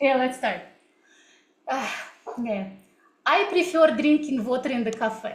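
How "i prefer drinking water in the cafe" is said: thick, heavy Russian accent, louder. Showing viewers how a strong russian accent sounds: heavy russian accent. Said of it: "I was also speaking in this way".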